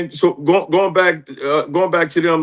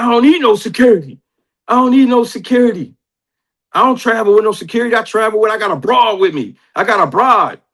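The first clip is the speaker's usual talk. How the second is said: put-on hyped, excited voice, higher pitch; 5 semitones higher than usual. Retelling a phone call where C-Dub turned down security: imitating C-Dub sounding hyped. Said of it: "And he was hyped".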